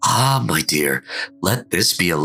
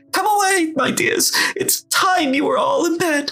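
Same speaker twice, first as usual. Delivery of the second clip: quavering, trembling, very high canary voice. A narrator reads a canary calling to his children, in a trembling voice. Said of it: "called out in a trembling voice".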